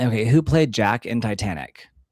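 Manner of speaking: ordinary delivery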